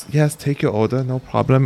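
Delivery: small, timid, obliging, meek voice. Acting out a little old lady taking an order, imitating a meek voice. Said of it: "with a meek voice".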